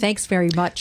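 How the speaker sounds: mock-grateful, ironic, sarcastic tone. Thanking the other speaker for turkey advice: sarcastic thanks. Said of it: "I'm gonna thank you in a sarcastic way".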